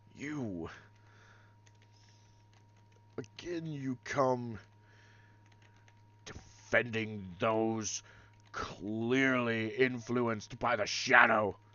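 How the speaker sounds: enraged character voice. A game master voicing Vates as Pax approaches him, losing his temper. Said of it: "so Vates is gonna lose it".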